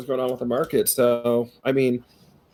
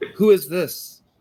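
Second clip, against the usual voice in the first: very raspy, hoarse, worn-out, tired voice; 4 semitones higher than usual. A voice answers the radio call: very raspy voice. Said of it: "he says in a very raspy voice".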